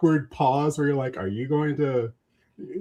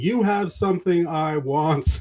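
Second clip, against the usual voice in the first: slow, half-hearted calling out; 3 semitones higher than usual. Speaker acts out standing outside a seller's place, retelling own yelling. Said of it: "I'm standing outside their place just yelling".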